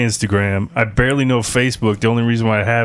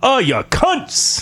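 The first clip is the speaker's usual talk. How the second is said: fake English accent, higher pitch; 14 semitones higher than usual. Joining in as an escaped prisoner: put-on British accent. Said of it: "Do it British".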